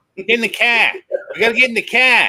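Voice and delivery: loud, put-on Boston accent. Acting out an eldritch horror scene: put-on Bostonian accent. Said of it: "Eldritch horror with a Bostonian accent".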